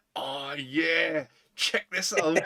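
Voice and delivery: slow, drawn-out, showing-off delivery. Joking about a character filming himself alone: Doc Brown voice. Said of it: "sitting by himself with a video camera in front of him going".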